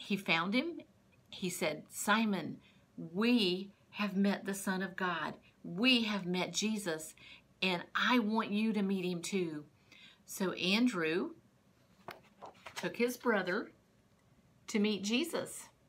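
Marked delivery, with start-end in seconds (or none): none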